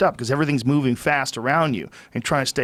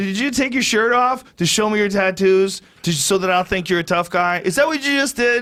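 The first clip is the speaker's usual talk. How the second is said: loud, taunting, mocking yell with laughing ridicule; 6 semitones higher than usual. Retelling mocking a man who took his shirt off to show tattoos, retelling yelling at him. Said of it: "And so I'm yelling this at him".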